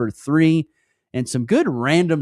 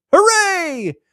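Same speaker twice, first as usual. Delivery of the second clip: very high, loud, heavily sarcastic cheer; 5 dB louder than usual. Greeting the kids going back to school today: very sarcastic jeer. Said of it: "In a very sarcastic jeer".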